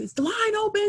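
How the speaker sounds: put-on shrill, loud, very high shouting. Retelling how a man in line asked a question, imitating his loud yelling. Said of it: "he was very loud and he was like".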